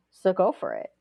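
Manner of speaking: usual speaking voice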